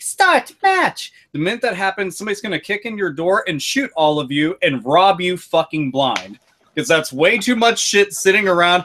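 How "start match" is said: very high, sweet, cute Japanese announcer voice. Imagining the game starting a match, voicing it in a cute Japanese voice. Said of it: "some cute Japanese voice like".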